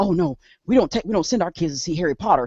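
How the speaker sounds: put-on alarmed, freaked-out voice. Retelling how church members reacted to harry potter: imitating alarmed churchgoers. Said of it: "everybody in the church was like".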